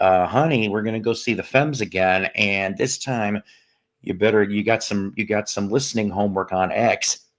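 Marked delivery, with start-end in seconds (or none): none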